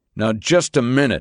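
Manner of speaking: ordinary delivery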